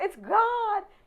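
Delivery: high, loud, excited awestruck cry. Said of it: "I go".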